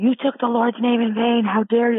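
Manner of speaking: mock very high, shrieking screaming woman voice. Retelling how an upset woman in the audience screamed: imitating a woman screaming. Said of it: "she was screaming".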